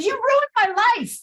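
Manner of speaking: mock shrill, very high, out-of-control screaming. Recalling losing it after pulling over, the speaker repeats what they screamed; retelling a scream. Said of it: "I just started screaming at them".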